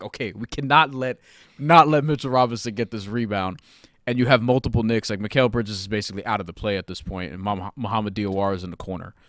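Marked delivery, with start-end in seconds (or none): none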